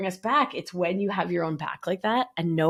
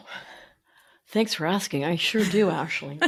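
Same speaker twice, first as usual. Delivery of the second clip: put-on public radio announcer voice. Answering another speaker's question about tools, the speaker uses an NPR voice. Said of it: "that was my N P R voice".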